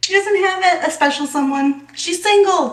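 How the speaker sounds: shrill, very high, loud yell. Voicing Thistle calling out to the group: yelling out. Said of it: "Thistle yells out".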